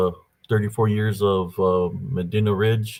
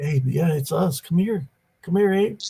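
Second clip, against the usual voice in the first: high-pitched, coaxing, luring voice; 9 semitones higher than usual. Retelling a voice from the dark creek trying to lure: imitating a luring call. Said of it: "mimicked three voices trying to lure me".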